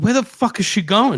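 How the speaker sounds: high-pitched screaming. Retelling how the speaker screamed at Linda: retelling own screaming. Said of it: "I'm screaming at Linda".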